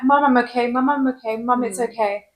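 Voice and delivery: ordinary talk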